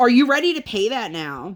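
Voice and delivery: put-on sassy, snippy, attitude-laden tone. Retelling how she came in asking about paying: imitating someone with attitude. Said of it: "she comes in with so much attitude and goes".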